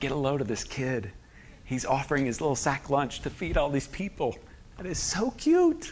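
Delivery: soft, sneering, cynical aside. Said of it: "Can you hear the cynical adults around him?".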